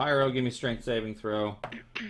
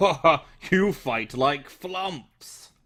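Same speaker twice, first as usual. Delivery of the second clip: booming, very slow, drawn-out bellowing laugh; 4 semitones higher, 5 dB louder than usual. Voicing a creature taunting the players in a fight: bellowing and laughing. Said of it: "he just kind of bellows and laughs".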